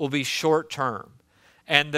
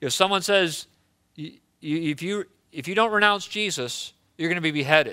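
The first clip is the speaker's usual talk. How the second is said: ordinary delivery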